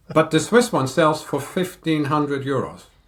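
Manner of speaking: ordinary delivery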